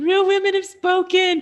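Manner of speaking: put-on very high, tearful sobbing cry. Retelling the moment the product sold out: imitating own past sobbing. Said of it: "and I'm, like, sobbing".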